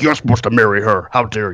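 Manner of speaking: put-on indignant, angry, scolding advisor voice. Retelling what the movie's advisor says to him: imitating an angry advisor.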